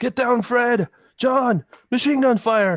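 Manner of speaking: very high, drawn-out screaming yell. Voicing a character warning comrades under machine gun fire: screaming. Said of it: "Woody screams out".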